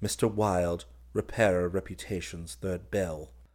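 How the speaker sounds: ordinary delivery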